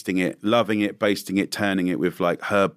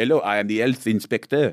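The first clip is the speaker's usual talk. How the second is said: put-on French accent; 2 semitones higher than usual. Retelling the voice a Disney role demanded: put-on French accent. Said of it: "You just got to talk like this".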